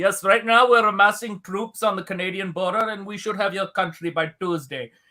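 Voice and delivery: put-on Indian accent, statesman-like voice. Imitating Modi to show what he could say unnoticed: Modi's Indian accent. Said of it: "you can do anything with that accent".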